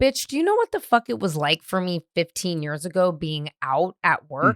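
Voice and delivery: plain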